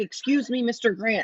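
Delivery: ordinary talk, nothing marked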